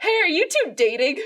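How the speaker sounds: very loud, high-pitched shouting holler. Retelling how a driver called out the car window: imitating a man shouting. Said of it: "he shouts out the window".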